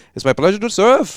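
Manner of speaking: put-on relaxed Canadian accent. Retelling greeting a speaker at an event, his reply: Canadian accent. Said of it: "he's got his Canadian accent".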